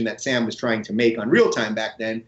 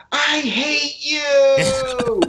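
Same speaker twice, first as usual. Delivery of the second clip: put-on very high shrill screaming, "you" drawn out; 13 semitones higher than usual. Retelling how a protester at a talk stood up: imitating a screaming protester. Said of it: "she started screaming".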